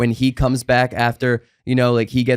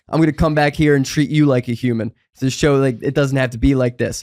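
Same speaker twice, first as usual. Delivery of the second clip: usual speaking voice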